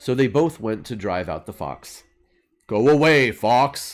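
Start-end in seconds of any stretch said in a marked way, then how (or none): 2.7-4.0 growled out loud. Reading a fable, voicing the Bear speaking to the Fox, growling as the Bear. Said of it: "growled the Bear".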